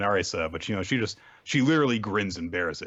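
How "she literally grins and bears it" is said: ordinary talk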